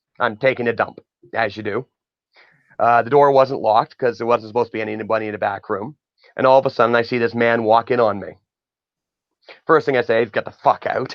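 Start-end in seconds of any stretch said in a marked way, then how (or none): 10.3-11.2 mock-angry, re-enacted pissed-off tone. Retelling a man walking in on him in the back room; retelling an angry outburst. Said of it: "So I'm pissed".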